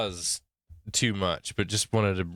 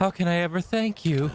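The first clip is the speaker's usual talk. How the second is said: put-on feminine voice, very high; 9 semitones higher than usual. Voicing a line despite saying he can't do it: put-on feminine voice. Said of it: "I can't really do a feminine voice, but I'll I'll, I'll embarrass myself for this".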